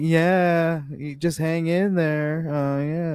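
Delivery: very high, very slow, distracted and bored drawl. Retelling a phone call, imitating a distracted, bored reply. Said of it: "like she's doing her nails".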